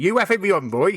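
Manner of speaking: put-on heavy West Country accent. Recalling a man who thought you were taking the mickey, quote him in a really thick West Country accent. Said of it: "in his really thick West Country accent".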